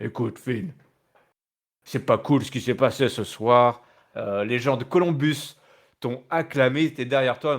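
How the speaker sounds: put-on big, gruff, heavy voice. Retelling what a wrestler told his rival after the match: imitating Damian Priest's big voice. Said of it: "avec sa grosse voix là comme ça".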